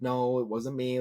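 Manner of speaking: play-acted timid, frightened, fearful voice. Retelling a wrestler's reaction to a surprise return: imitating someone scared. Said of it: "all scared".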